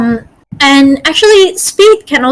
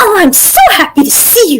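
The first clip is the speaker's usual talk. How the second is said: voice a full octave above normal; 5 semitones higher than usual. Speaker demonstrates to an anxious man how to sound, one octave higher. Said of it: "you just want to go one octave".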